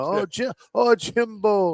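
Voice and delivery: put-on Creole-accented speech. Retelling how friends mocked a coach's name: mocking a Creole-accented voice. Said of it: "used to make fun of it".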